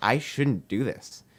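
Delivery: put-on trembling voice. Retelling what a man said during an intro, imitating a trembling voice. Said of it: "tremor in his voice".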